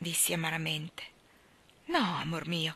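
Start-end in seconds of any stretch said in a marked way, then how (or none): 1.9-2.8 with some warmth. Answering the narrator's bitter question, with some warmth. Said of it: "mi rispose con un certo calore".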